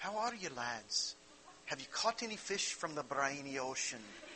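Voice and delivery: soft, pitch-swinging put-on Scottish accent.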